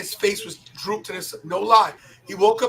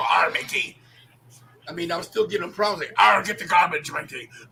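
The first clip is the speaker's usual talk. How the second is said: put-on pirate voice, lower; 3 semitones lower than usual. Imitating a friend whose face had dropped: Captain Jack Sparrow voice. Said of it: "he like Captain Jack Sparrow".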